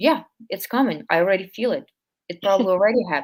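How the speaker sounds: sarcastic, mock-agreeing tone. Showing how to answer intrusive thoughts: sarcastic. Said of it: "be very sarcastic and just be like".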